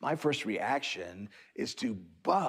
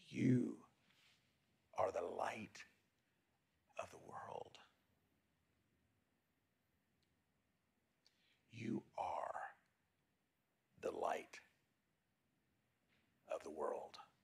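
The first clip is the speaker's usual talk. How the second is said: very quiet, soft, slow whisper to oneself; 3 semitones lower, 12 dB quieter than usual. Leading listeners to repeat an affirmation to themselves, the speaker is whispering. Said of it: "So just whisper that to yourself".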